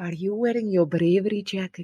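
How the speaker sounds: put-on movie Scottish accent with rolled r's. Repeating a movie phrase from a scottish guy, a speaker uses a fake scottish accent. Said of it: "that exact accent that you just done".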